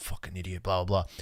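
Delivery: low, grumbling mutter under the breath. Retelling an opponent's insult during a basketball game: imitating someone muttering under breath. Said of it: "muttering under his breath".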